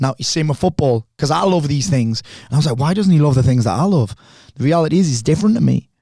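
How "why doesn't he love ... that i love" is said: ordinary delivery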